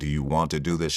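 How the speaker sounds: usual speaking voice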